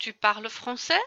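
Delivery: pitch climbing upward on français. French lesson on asking questions by intonation, rising pitch at end on français. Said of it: "à la fin de ma phrase ma voix est plus aiguë".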